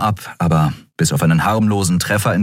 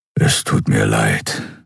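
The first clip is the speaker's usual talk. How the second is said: rumbling grumble, much lower; 10 semitones lower than usual. Narrator reads his reply to the weeping girl, grumbled. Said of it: "brummte er".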